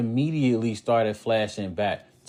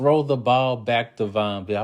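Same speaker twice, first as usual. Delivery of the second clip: plain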